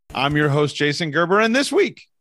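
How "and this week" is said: cracking, breaking voice partway through the line. Podcast host introducing himself and the week's show, voice cracking. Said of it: "that was my voice cracking".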